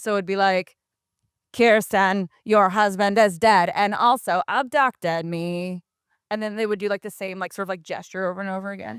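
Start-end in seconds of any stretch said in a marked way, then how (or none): 1.6-5.8 slow, robotic synthesizer voice. Retelling what they would say in that synthesized voice: Stephen Hawking computer voice. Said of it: "it was that voice".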